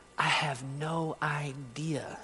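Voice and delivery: mock, soft, pushed out past tears. Speaker retelling a consoled woman's answer, retelling her choked-back tears. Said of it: "And choking back tears".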